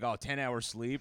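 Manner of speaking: ordinary delivery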